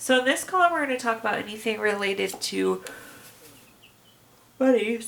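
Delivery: speaking while interrupted by hiccups. Explaining a money column to viewers while having the hiccups, with the hiccups. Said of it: "I have the hiccups".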